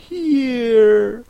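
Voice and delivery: high, long, drawn-out crying out. In the flurry of the moment she jumps up, crying out. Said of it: "cried Alice".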